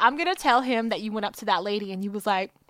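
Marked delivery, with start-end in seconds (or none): none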